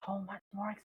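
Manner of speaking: soft, hushed half-whisper under the breath. Player speaking in character during a roleplay scene, half-whispering. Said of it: "and whispers".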